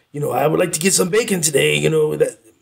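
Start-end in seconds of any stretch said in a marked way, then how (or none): 0.3-1.7 put-on talking dog voice. Trying to imitate the narrator's voice for Oberon the dog: attempted Oberon dog voice. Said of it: "I can't even do the voice".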